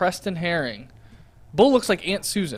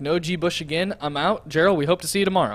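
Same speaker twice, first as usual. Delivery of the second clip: ordinary talk, nothing marked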